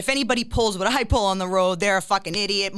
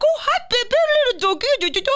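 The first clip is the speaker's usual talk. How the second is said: put-on very high-pitched doggy baby talk; 4 dB louder than usual. Retelling slowing down for someone walking a dog: imitating own talk to a dog. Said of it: "and then talk to him".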